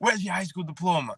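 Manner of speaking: rude, harsh, high-pitched barking voice. Retelling a job interview where a rude lady demanded his diploma: imitating a rude woman demanding. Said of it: "she's dogging me".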